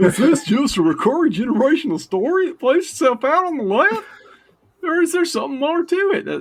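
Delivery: very high, swooping, silly, dopey cartoon dog voice. A guest reads a discussion question aloud in a stupid Goofy voice. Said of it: "Like a stupid voice".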